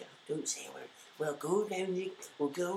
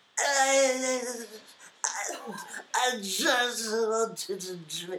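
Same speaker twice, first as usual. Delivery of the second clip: mock very loud, slow, drawn-out drunken stutter; 6 semitones higher, 8 dB louder than usual. Asked to do an impression of a girl, imitating drunk Steph Bissell. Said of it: "can you do an impression of her".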